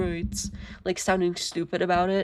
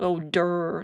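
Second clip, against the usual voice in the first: mocking, stupid-sounding taunting voice. Describing how opponents taunt players: stupid-sounding mocking voice. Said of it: "a stupid sounding one".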